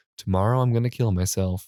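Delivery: ordinary delivery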